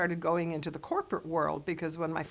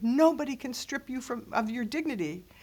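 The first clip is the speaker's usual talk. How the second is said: really angry scolding tone, pitched up; 7 semitones higher than usual. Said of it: "in really angry tones".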